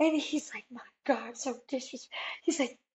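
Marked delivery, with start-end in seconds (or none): 0.7-2.2 soft, irritated, annoyed scolding tone. Retelling how he picked up the phone and reacted, mock-angry. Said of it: "picks up the phone all mad".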